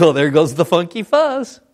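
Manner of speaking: mock offhand, light, jokey tone. Retelling what they jokingly said as a police officer passed: retold joking remark. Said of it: "I just jokingly says".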